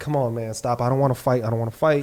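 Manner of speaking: put-on pleading, near-begging appeal. Describing a street fight, acting out the man being backed up: retelling someone begging. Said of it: "almost begging".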